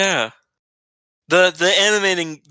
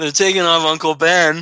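ordinary talk

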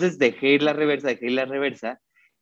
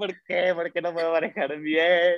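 put-on tearful crying voice, higher; 3 semitones higher than usual. Retelling how they cried in the car: imitating own past crying. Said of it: "me puse a llorar en el carro".

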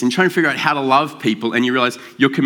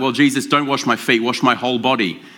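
plain

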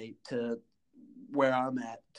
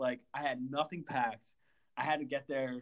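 ordinary talk, nothing marked

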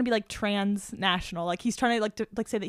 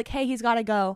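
plain

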